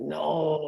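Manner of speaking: very deep, short, voice dropped way down. Retelling how a wrestler answered whether he ever lost: imitating Masa Saito's deep voice. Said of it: "He had this very deep voice".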